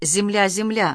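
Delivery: ordinary delivery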